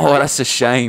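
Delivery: very loud, high, booming put-on British accent. Retelling how classmates mocked Mister Cohen: imitating Mister Cohen's British accent. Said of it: "'cause of his British accent".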